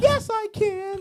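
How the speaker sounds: pitched way up and slow.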